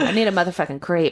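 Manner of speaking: plain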